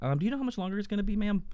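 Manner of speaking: play-acted, very high-pitched, extra-courteous, super polite tone. Retelling a drive-through wait, imitating own super polite voice. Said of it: "I said it just like that".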